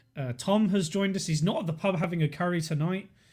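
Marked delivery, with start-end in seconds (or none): none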